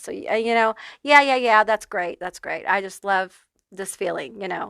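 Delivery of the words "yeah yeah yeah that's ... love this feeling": dripping with heavy sarcasm. Acting out a reaction to hearing that hardship helps you heal: mock sarcastic. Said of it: "very sarcastically".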